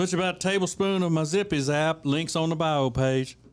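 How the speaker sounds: put-on Texan cooking-show host voice. Imitating an internet cooking host from Texas: Pepper Belly Pete impression. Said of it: "we all do an impression of him".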